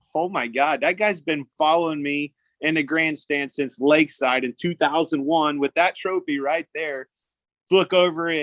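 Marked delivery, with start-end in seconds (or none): none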